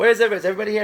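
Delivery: put-on yelling. Acting out being lost and calling to everyone: acting out yelling to everyone. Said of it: "Yelling out to everyone".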